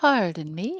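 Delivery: poshest, most upper-class American accent. Asked to do the most posh American accent, please: most posh American accent. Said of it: "do the most po the most posh American accent".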